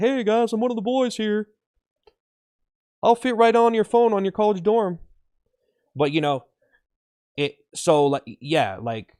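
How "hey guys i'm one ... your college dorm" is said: put-on very high, casual, one-of-the-boys bro voice. Describing a CEO trying to seem casual, imitating a casual bro voice. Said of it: "He's like".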